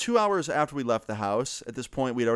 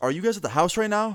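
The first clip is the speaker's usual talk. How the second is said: put-on worried voice, higher; 7 semitones higher than usual. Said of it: "he sounds really, like, worried".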